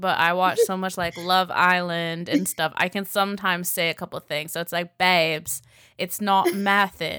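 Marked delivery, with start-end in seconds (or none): 5.0-7.2 poorly attempted British accent, slow. Speaker tries a phrase picked up from a tv show, in a bad british accent. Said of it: "I don't have a good British accent".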